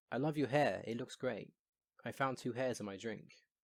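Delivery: plain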